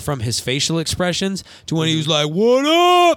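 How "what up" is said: very high-pitched and loud. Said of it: "trying to drop the [name] bass in his voice".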